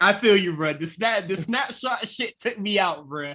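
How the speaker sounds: plain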